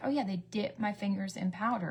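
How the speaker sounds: ordinary delivery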